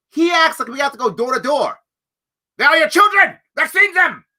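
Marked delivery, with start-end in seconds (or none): 2.6-4.1 very high, bad fake German accent. Mocking what someone seems to want done, in a bad german accent. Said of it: "I did a bad German accent".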